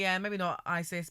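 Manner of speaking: ordinary talk, nothing marked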